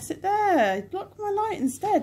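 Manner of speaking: high, sarcastic, jabbing tone.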